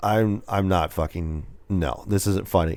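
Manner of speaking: acted-out dry, expressionless, soft, flat deadpan. Retelling being pulled over, imitating a deadpan cop. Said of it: "the cop is just deadpan".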